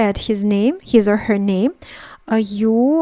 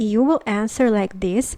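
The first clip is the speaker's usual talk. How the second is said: ordinary talk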